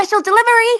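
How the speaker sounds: very high-pitched character voice. Showing the voice given to Bin: voice for Bin. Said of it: "this is my voice that I, that I give Bin".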